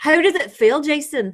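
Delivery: weak put-on Scottish accent. Repeating a question to the other speaker on request, in a scottish accent. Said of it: "I could ask you in a Scottish accent".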